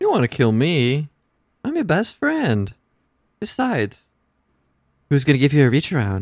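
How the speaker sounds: sing-song villain voice, toying, swooping delivery. Performing a scene's lines after being asked to match them: Jared Leto Joker voice. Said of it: "you do it just like Jared Leto".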